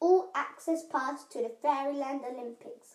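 ordinary talk

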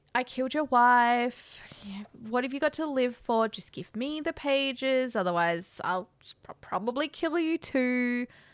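very polite, mild-mannered British menace, "wife" drawn out. Retelling a villain's threat to another speaker: very polite British threat. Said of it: "threatening him in a very British way. So it's very polite".

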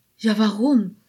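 gentle, quiet whisper. A daisy echoes the question to its neighbor in a soft whisper. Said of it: "flüsterte ein Gänseblümchen mit sanfter, leiser Stimme".

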